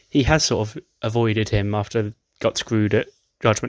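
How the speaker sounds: ordinary talk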